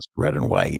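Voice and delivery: hushed whisper under the breath, kept soft. Sharing a fact while unsure if the kids are still awake, whispering. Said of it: "I have to whisper this".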